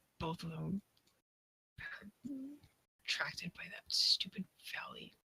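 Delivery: softly whispered, muttered grumble under the breath.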